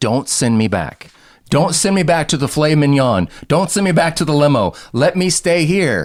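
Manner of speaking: mock earnest, repeated pleading, begging tone. Retelling a movie scene where he runs into Don Cheadle, retelling his begging. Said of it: "and he begs".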